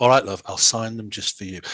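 patronizing, condescending, indulgent talking-down tone. Retelling how he agreed to sign the band: imitating a patronizing tone. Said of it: "patronizingly tapped her on the thigh and went".

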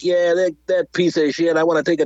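New York cab-driver voice. Retelling what a character in a film scene said, in a New York cabbie accent. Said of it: "He sounded like a New York cabbie".

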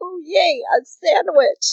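put-on thrilled, gushing, high, drawn-out excited delight. Retelling a scene where Nagisa gets a sandwich: imitating Nagisa being excited. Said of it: "she's so excited for the sandwich".

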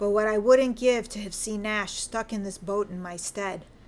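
ordinary delivery, nothing marked

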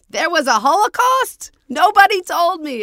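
very loud, very high, booming, drawn-out shout. Retelling an interviewee's reply to a question: imitating his loud voice. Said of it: "in his voice, really loud".

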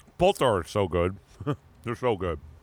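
muffled full-mouth speech. Chatting about what they listen to while painting, talking with a mouth full. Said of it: "I decided to put a pretzel in my mouth".

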